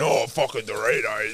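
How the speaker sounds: play-acted underwhelmed, let-down, unimpressed tone. Mocking the other speaker's gift reaction: imitating an unimpressed reaction. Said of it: "I expected a nicer reaction than".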